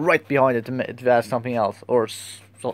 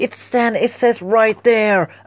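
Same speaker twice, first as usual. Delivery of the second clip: mock angry raised voice, much higher and slower; 9 semitones higher, 4 dB louder than usual. Recalling snapping at a customer, mock-angry raised voice. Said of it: "I raised my voice, I got a little angry".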